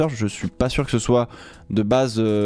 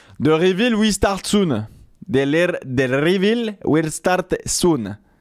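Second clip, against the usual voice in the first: put-on Italian accent in English, much higher; 6 semitones higher than usual. Between French remarks, saying an English line: Italian accent in English. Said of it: "Je fais très bien l'accent italien en anglais".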